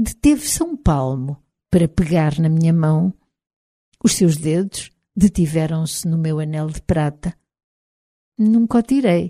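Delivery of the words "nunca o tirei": stammered, stuttering, much higher pitch. The first-person narrator speaks as his fingers rest on her silver ring: stammered.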